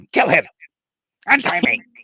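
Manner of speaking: very high, shrill, very loud, cranky grumpy voice. Recreating how she sounded when using the voice, imitating a grumpy mom voice. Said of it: "she just sounded like a really grumpy mom".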